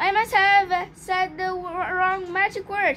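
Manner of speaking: usual speaking voice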